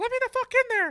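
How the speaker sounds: very high, very loud squeaky yell. Retelling a meme where a cartoon character bangs on a door: imitating Mickey Mouse yelling. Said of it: "Mickey's, like, trying to bust the door down".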